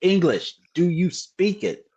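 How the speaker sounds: put-on American accent. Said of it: "what's his cousin Avi in Snatch".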